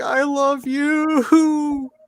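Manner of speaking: very high, plaintive, pleading meow-voice. Imitating the dog meowing during a bath: imitating a pleading cat. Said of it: "pleading with me".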